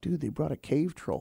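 very quiet voice. Retelling what someone leaned over and said, real quietly. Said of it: "Tony leaned over real quietly and went".

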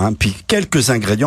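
normal talking voice

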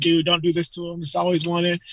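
normal talking voice

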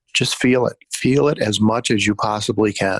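normal talking voice

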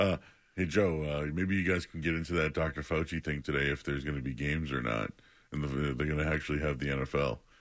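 low, mumbling put-on stoner voice.

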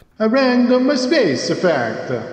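hammed-up Italian accent, very high, swooping. Told to do a better italian accent: exaggerated italian accent. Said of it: "why am I butchering an Italian accent?".

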